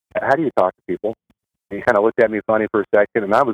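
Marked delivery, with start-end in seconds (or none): 0.1-1.1 put-on quiet whisper. Retelling quietly approaching a counselor in rehab: imitating own past whisper. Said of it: "I kinda whispered".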